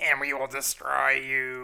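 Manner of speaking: loud, strange, weird possessed voice. Describing a character something else talks through, the speaker quotes him, imitating his weird voice. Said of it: "he gets into this weird voice".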